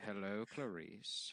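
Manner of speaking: put-on creepy, sinister villain voice. Picturing a fictional killer in his cell, imitating Hannibal Lecter. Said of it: "And he's like".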